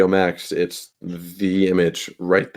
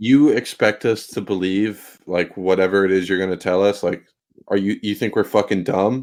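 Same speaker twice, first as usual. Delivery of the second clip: ordinary talk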